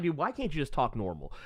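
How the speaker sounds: ordinary talk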